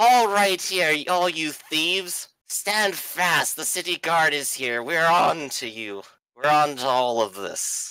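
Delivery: rough, gruff guard voice. A storyteller voices the city guard calling out the thieves: gruff voice. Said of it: "the gruff voice comes out and says".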